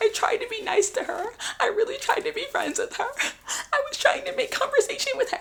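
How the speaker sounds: very high tearful crying. Imitating a girl crying on the couch: imitating someone crying. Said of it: "she's crying on the couch".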